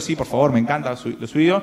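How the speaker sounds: ordinary talk, nothing marked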